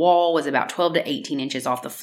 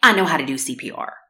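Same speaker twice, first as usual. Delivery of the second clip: put-on smug, snarky, mocking tone. Describing a 911 tape, mimicking how Tom sounded: imitating Tom's smug snark. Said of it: "Like he's very smug and snarky".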